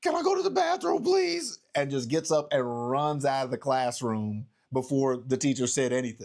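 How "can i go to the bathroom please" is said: very high-pitched, play-acted sobbing yell. Retelling how a crying kid begged to leave class, imitating a crying yell. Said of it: "he was like crying, and he yells".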